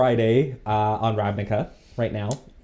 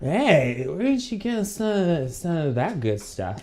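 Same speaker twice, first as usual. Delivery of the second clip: tipsy slurred voice, higher and quieter; 6 semitones higher, 4 dB quieter than usual. Voicing a Vedalken who had too much to drink: drunk voice. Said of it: "I like this voice".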